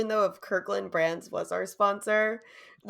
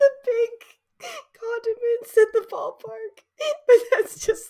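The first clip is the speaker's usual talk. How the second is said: high, loud, uncontrollable laughing fit. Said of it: "I don't know why I'm laughing so much".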